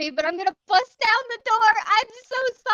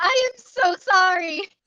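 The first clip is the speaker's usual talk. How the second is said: very slow, dragged-out yell; 3 semitones lower, 3 dB louder than usual. Playing a character who apologizes to whatever is screaming: shouting. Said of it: "he's going to shout".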